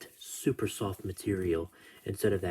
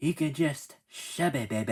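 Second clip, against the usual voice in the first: silly put-on little high-pitched voice; 5 semitones higher than usual. Quoting what he says after joining the NWO: his funny little voice. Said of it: "that's how he says it in his funny little voice".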